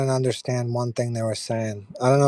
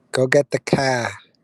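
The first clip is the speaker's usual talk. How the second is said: put-on Boston accent. Finding it funny how Boston speakers say 'the car', Boston accent. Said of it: "the way they say the car".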